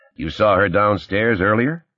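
plain

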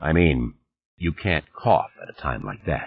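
usual speaking voice

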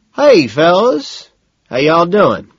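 thick Georgia twang, loud, swooping. A narrator reading a novel as Montgomery greets the men: Montgomery's thick Georgia twang. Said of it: "Montgomery speaks in a thick Georgia twang".

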